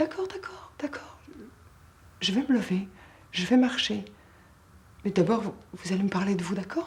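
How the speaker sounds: put-on composed, collected, very calm, even delivery. Retelling agreeing to walk for a frustrated man: retelling own very calm words. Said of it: "je lui ai dit très calmement".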